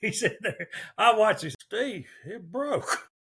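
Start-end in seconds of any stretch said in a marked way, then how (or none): 1.6-3.0 slow, unhurried, easygoing, laid-back drawl. Retelling a story, quoting Ronnie as the lead breaks, imitating Ronnie's slow laid-back talk. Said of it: "as slow talking, laid back as Ronnie is".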